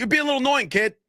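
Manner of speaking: play-acted shrill shout, pitched very high. Retelling an argument, the speaker quotes what the other guy yelled at them, retelling a yell. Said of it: "He yells".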